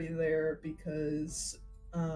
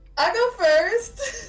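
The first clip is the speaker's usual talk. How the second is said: loud excited voice; 11 dB louder than usual. Offering to go first at introductions, loud excited voice. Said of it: "That was so loud".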